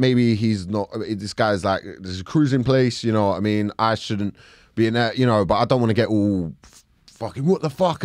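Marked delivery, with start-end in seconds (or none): none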